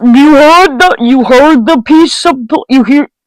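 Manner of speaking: stuttering, tripping over words, stumbling restart. During a Ouija board session, speaker addresses the group: stuttering. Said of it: "Sorry for the stuttering".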